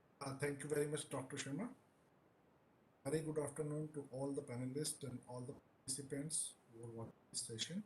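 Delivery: soft, faint speech, barely audible. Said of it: "Might have to speak up".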